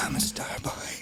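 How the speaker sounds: real low, breathy, almost whispered voice. Retelling an audition where a guy said it real low: imitating someone saying it real low. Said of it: "real, real low".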